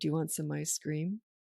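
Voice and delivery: hushed, very quiet, dropped-down low voice. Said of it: "talk lower and say".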